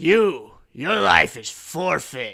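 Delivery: very loud, high-pitched shout in broken speech. Village chief Turok confronts the swamp boy; shouting in broken Common. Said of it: "in broken common, he shouts".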